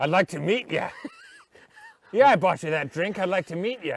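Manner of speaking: loud, swooping, creepy bar guy voice. After saying they sound like one, playing a creepy guy at a bar. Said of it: "I sound like a creepy guy at a bar".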